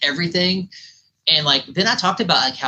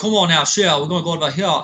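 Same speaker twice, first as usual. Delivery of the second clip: put-on Louisiana accent; 3 semitones higher than usual. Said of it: "the Cajun accent".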